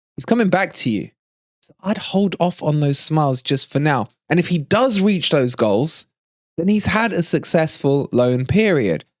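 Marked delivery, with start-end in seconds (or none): none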